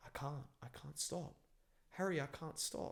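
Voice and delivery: acted, soft, terrified pleading, losing control. Retelling how a possessed-looking woman begged the speaker, imitating a terrified voice. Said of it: "she says in like a terrified voice".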